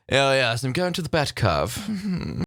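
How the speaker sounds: put-on slow, really refined posh accent. Speaker imagines how someone might say a name, in a really posh accent. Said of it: "sounds like some sort of really posh way of saying Batcave".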